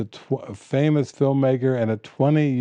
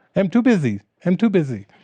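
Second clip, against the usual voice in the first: put-on little Chinese accent, pitched up; 6 semitones higher than usual. Speaker imitates a woman she describes, in her little Chinese voice. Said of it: "she just with her little Chinese voice".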